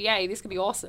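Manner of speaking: ordinary talk, nothing marked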